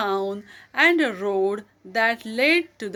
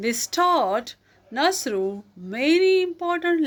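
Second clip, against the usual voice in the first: plain reading voice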